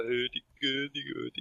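put-on mock Swedish voice. Showing what a Swedish impression would sound like: Swedish Chef voice. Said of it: "the Swedish Chef is hilarious".

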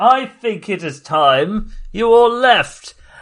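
authoritative British voice. A voice from beyond the archway addresses the whole group: commanding British voice. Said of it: "there is a commanding voice... By which I mean British".

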